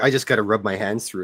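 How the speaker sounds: ordinary talk, nothing marked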